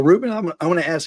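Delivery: voice cracking. A broadcaster starts to ask a fellow broadcaster a question, voice cracking. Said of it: "my voice keeps cracking".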